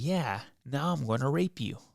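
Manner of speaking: put-on clown character voice. Retelling how a friend tussled with a man, then switched voices: clown voice. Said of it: "John turns into this clown voice".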